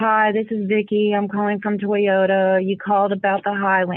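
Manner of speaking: lifeless, flat robotic monotone with zero excitement. A speaker retells her old voicemails, sounding flat like Siri. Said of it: "I sounded like a damn Siri".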